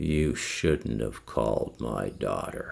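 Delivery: very low, creaky, rough demonic growl. Speaker quoting what a man said to them, in a demon voice. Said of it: "It sounded like a demon voice".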